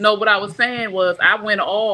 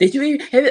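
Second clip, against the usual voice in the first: mock angry outburst, high and snappy, full of attitude; 5 semitones higher than usual. Retelling the daughter confronting the speaker upstairs: imitating a snappy attitude. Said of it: "she came out there with an attitude".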